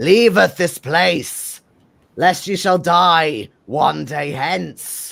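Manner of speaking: strained, raspy, forced, loud, slow otherworldly voice. Voicing a possessed figure warning the crowd: raspy, forced voice. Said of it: "begins to speak in a raspy, forced voice".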